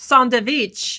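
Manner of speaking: playful, silly Persian accent. Saying a food word in a silly persian accent. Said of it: "my silly way of saying it with a Persian accent".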